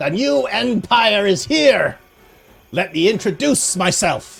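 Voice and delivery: screaming kobold creature voice. Voicing the leader of the kobolds in a fight: screaming kobold leader. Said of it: "he screams out in common".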